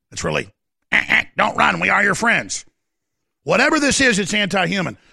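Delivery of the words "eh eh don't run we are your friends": B-movie alien invader voice. Mocking an invasion by quoting the blonde-haired woman from Mars Attacks: Mars Attacks alien voice. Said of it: "Like Mars Attacks".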